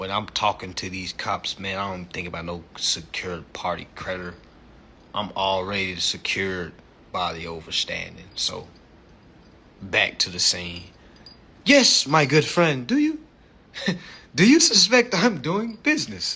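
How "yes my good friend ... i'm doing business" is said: fake put-on accent, pitched up and loud. Acting out a scene talking to police, in a put-on accent. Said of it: "is this your real fucking voice?".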